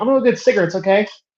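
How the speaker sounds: weirdly unnatural, stilted, fast delivery. Describing a film scene, the speaker acts out a man walking out: imitating a very unnatural tone. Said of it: "in a very unnatural tone".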